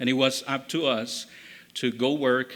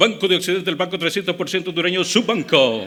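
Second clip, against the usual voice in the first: auctioneer-speed radio ad read, loud and high; 5 semitones higher, 7 dB louder than usual. Speaker recalls radio training and demonstrates an ad read at auctioneer speed. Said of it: "at the speed of an auctioneer".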